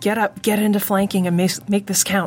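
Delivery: hushed, quiet whisper. Narrating a game, voicing a character who whispers to a waking player: whispering. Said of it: "she basically whispers to you like".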